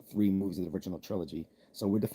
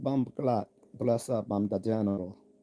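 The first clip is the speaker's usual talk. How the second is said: bad, poor put-on patois accent. Reading out a live-chat message from J Station: bad patois accent. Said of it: "that was such a bad accent of mine".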